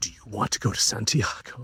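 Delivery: acted dramatic delivery. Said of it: "It was so dramatic".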